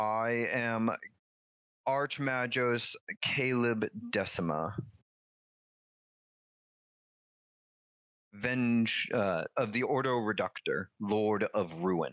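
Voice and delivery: machine-like, mechanical, synthesized robotic voice. Voicing a character who finally speaks: mechanical synthesized voice. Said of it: "his mechanical synthesized voice".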